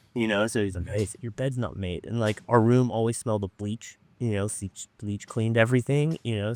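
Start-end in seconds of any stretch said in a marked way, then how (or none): 0.9-2.1 put-on Mexican accent, quieter. Recalling a man he shared a room with, the speaker quotes him in a Mexican accent. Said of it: "had a Mexican accent".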